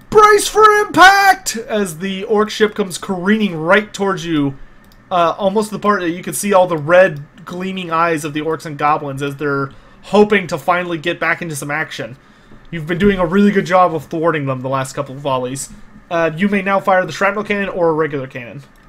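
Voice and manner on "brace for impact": high, loud, slow bellowed yell.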